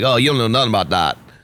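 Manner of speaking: put-on child voice. Explaining a diss track, quoting a kid from an Instagram post in a weird child accent. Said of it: "saying it in this weird child accent".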